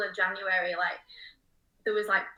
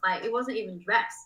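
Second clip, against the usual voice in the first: normal talking voice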